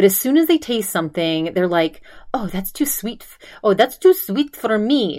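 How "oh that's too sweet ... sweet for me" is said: put-on little Greek accent, lightly done. Speaker quoting a woman from a Greek family, doing a little Greek accent. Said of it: "She like did a little Greek accent".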